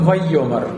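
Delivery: vayomar with stress moved back off the last syllable.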